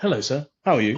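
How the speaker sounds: courteous, put-on polite telephone voice.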